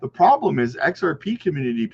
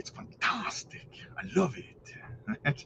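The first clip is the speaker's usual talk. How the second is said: breathy whisper, soft and very slow; 15 dB quieter than usual. Answering a question about repeating himself, doing a Nacho Libre impression. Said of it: "Try to do my best Nacho Libre impression".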